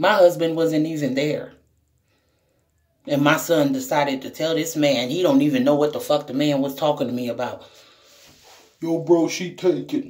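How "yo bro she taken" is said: slow, blunt, no-nonsense put-on voice. Retelling how the son warned off a man: imitating son's put-on deep voice. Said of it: "put on this big ass deep voice".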